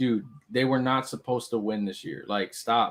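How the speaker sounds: usual speaking voice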